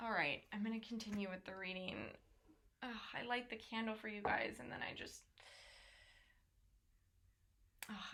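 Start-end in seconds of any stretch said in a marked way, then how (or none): 2.8-8.1 upset, distressed, quieter. Host of a live reading pauses over a damaged plant, upset. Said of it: "I'm actually really upset about this right now".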